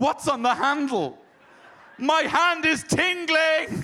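very high-pitched, shrill, loud shout. Retelling how he reacted after touching the door handle, retelling a shout. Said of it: "he starts shouting".

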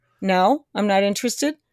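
ordinary talk

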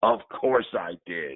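put-on low, gravelly elderly voice. Retelling a man's reply when asked if he pitched a complete game, imitating his gravelly old voice. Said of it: "with his gravelly old voice".

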